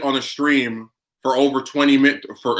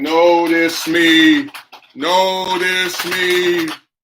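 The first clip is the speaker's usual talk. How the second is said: mocking, sarcastic, very slow delivery; 5 semitones higher, 4 dB louder than usual. Mocking how the mod acted on streams: mocking imitation of the mod.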